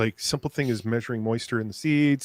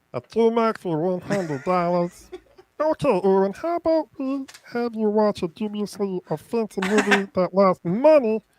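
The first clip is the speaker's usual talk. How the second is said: very high, cartoonish put-on character voice; 9 semitones higher than usual. Reading out a requested trivia question in a Meatwad voice. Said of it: "Tomac asked for it to be in a Meatwad voice".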